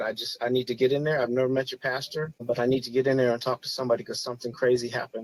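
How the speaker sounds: normal talking voice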